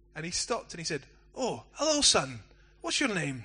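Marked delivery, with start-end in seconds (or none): 1.3-3.4 loud, drawn-out, sing-song put-on Scottish accent. Retelling meeting a man outside Wetherspoons, the speaker quotes him in a Scottish accent. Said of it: "That was Scottish".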